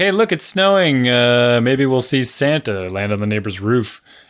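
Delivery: joking, sarcastic, tongue-in-cheek tone. Retelling a remark made when it started snowing: imitating own sarcastic tone. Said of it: "I do the sarcastic Santa stuff".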